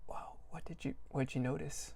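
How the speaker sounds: soft whisper, staying calm and composed. A player voices Treo addressing Kai, Treo whispering. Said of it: "his voice will go down to a whisper".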